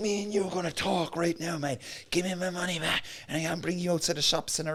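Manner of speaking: aggressive, menacing, violent, threatening tone. Retelling what an angry customer said to him: imitating a violent threat. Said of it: "it was really, like, violent".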